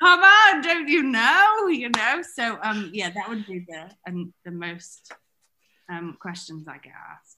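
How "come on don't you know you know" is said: put-on yell, much higher, louder. A guest recounts yelling at people who question using Pinterest, retelling a yell. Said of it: "I'm yelling at people going".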